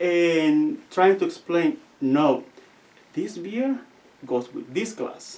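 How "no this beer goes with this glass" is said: put-on loving tone, quieter. Retelling how the lady came over explaining the glasses: imitating a loving explanation. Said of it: "in a very lovingly way".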